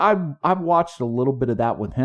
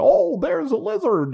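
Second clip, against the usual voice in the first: put-on very high, slow, drawn-out Australian accent. Asked if it's the best Australian accent, the speaker does a Steve Irwin impression. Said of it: "It sounds just like an Australian".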